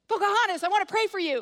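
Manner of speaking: sudden, really intense outburst, high and loud. Retelling a sudden shout at a woman on the van: imitating someone shouting. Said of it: "Christine just shouts out".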